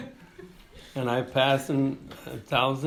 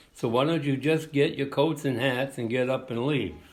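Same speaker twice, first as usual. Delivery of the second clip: normal talking voice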